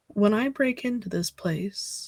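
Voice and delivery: muttered under breath. Voicing a character speaking to another character, under her breath. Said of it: "under her breath, quietly to Ken".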